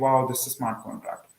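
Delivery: ordinary delivery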